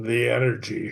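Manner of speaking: put-on very strong, heavy Scottish accent. Retelling what a ghost box answered: very Scottish accent. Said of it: "came back with a very Scottish accent".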